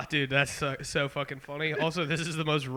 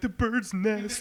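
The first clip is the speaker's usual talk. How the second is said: tearful, weepy, crying while speaking; 6 semitones higher than usual. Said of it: "he would just be crying, like".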